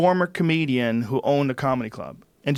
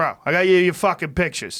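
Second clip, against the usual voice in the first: thick, exaggerated Boston accent, pitched up; 5 semitones higher, 3 dB louder than usual. Retelling what a guy told his client: imitating heavy Boston accent. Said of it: "with his fucking heavy Boston accent".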